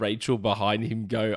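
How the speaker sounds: usual speaking voice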